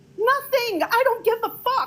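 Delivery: angry, high, slow, drawn-out voice. Arguing with another speaker about a politician's character: angry. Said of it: "why are you so angry, [name]?".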